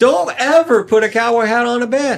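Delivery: high-pitched yelling. Retelling how he yelled at a girlfriend over his hat: imitating himself yelling. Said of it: "I'm yelling at this girl".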